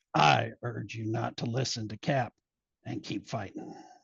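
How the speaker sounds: deep, low superhero voice. Trading character voices with a partner, answering the call to surrender: Wolverine voice. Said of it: "You do the voice of Wolverine".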